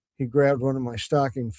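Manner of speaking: plain reading voice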